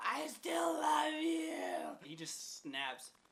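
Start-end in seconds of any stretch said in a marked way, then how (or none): 0.0-2.0 mock very high, very slow, hoarse ragged yell. Retelling a woman's fight with a man in a parking lot: retelling a yell. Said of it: "just fucking yelling at him in the parking lot".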